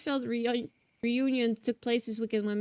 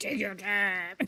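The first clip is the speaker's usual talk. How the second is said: put-on very angry tone; 3 semitones lower than usual. Repeating a game character's line, imitating a very angry voice. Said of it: "He's, like, very angry".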